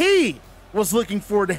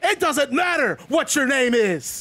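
ordinary talk

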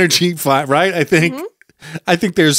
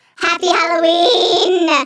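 eerie, creepy goblin creature voice, very high; 12 semitones higher than usual. On another speaker's cue, delivering a greeting; creepy goblin voice. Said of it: "You sounded like a goblin".

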